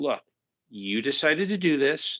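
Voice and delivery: mock composed, very calm, even, controlled tone. Describing a character's reaction, the speaker retells her line in a very calm voice. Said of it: "saying in a very calm voice".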